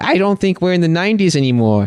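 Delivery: Long Island way of talking. Speaker retells a character's line after being shot back to Earth: Long Island accent. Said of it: "more of a Long Island accent".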